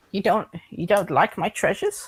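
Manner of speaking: put-on wounded, upset old man voice. Voicing an old man whose treasures were refused: upset old man voice. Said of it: "the old man seems a bit, seems a bit upset".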